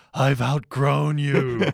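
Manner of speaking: put-on whisper. Retelling a scene where Homer whispers to Lenny and Carl: imitating Homer Simpson whispering. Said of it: "Homer just whispers".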